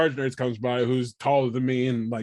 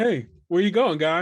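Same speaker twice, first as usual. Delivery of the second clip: put-on calm, soothing, coaxing tone, pitched up; 5 semitones higher than usual. Retelling calling out to a man shuffling around the nurse's station, in a calming voice. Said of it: "In my usual calming voice".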